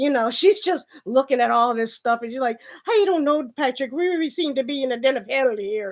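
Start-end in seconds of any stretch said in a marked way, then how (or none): 2.8-5.9 heavy Irish accent, acted voice. Retelling a film scene, voicing an Irish maid: heavy Irish accent. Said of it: "heavy Irish accent".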